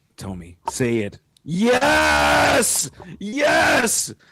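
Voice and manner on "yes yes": very high, ear-splitting excited shout. Reacting to the news that next week is Infinity: excited shouting. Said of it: "I didn't mean to blow your eardrums out".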